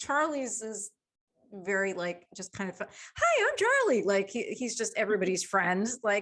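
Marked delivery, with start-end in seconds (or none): 3.2-4.0 very high, spastic, hyper-friendly voice. Giving the dog Charlie a voice: spastic friendly Charlie Day voice. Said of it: "kind of like Charlie Day on It's Always Sunny".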